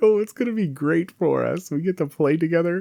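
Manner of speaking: excited, gushing voice. Imitating a spouse who is excited to play a two-player game: imitating an excited spouse. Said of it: "so excited to play this two-player game".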